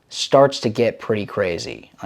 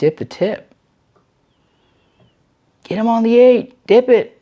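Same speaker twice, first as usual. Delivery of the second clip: shrill, very high, loud yelling; 12 semitones higher, 6 dB louder than usual. Retelling a fly-fishing moment with a trout beside the boat, re-enacting the yell.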